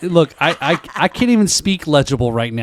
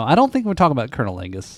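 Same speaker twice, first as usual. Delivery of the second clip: ordinary delivery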